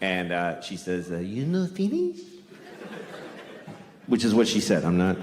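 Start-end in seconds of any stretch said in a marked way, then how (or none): 1.2-2.2 put-on Japanese accent, pitched up. Telling a story, quoting the waitress asking a question, in a put-on Japanese accent. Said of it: "I have to do the accent".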